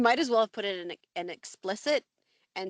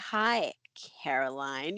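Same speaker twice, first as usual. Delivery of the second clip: mock toneless, flat, emotionless, unsettling delivery; 6 semitones lower than usual. Recounting how a woman greeted someone, which gave the speaker goosebumps, imitating a scary emotionless voice. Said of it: "she really embodies this like scary, emotionless person".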